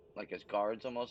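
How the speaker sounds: ordinary delivery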